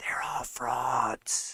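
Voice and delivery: eerie, creepy, breathy hushed whisper. Warning listeners about other people in the words of a politician, in a creepy whisper Joe Biden impression. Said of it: "that was my creepy whisper impression".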